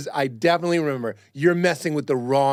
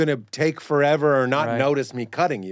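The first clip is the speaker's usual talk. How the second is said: plain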